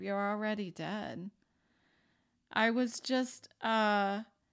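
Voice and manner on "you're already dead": put-on whisper, quieter. Retelling looking in the mirror, imitating own past whisper. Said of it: "and I whispered to myself".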